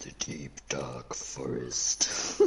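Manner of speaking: breathy, sinister, lurking villain whisper. Wondering where they've ended up, the speaker names the place in a Dr. Claw voice. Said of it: "Why did you sound like Mr. Claw from Inspector Gadget?".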